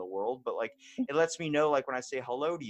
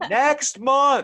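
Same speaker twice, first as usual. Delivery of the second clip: very loud, high-pitched bellowing yell; 13 semitones higher, 12 dB louder than usual. Recounting repeating an appointment offer to someone who keeps saying what, retelling yelling to a patient. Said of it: "stop yelling at me".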